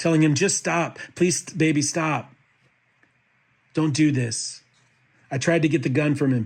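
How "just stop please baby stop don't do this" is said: put-on tearful, crying, pleading voice. Retelling a struggle over a rifle, repeating own past words: retelling own crying plea. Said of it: "I was pleading and crying".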